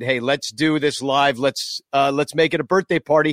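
plain

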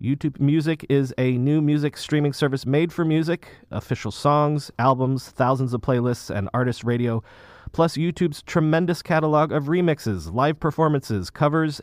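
plain

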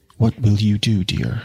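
weak, faint, worried, anxious voice. Narrator reading Sue's question to Jude, asked faintly. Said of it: "she asked faintly".

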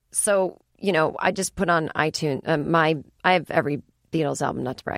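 ordinary delivery

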